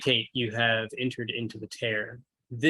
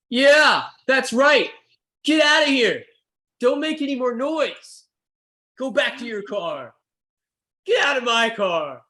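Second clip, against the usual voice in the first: very loud, very high, shrill shouting; 13 semitones higher, 8 dB louder than usual. Game master voicing Benson as the band heads back to their car, Benson yelling. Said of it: "he's yelling at the band".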